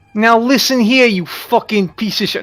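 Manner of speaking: Brooklyn-accented voice. Showing how halflings in your settings talk, Brooklyn accent. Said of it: "halflings in my in my settings so far have had Brooklyn accents".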